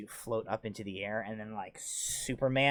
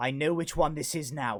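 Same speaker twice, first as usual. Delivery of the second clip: raised, pitched-up voice projected to carry far; 5 semitones higher than usual. Voicing a character who announces a discovery to the whole room: raised voice. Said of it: "raises his voice so that, like, all of you can hear him".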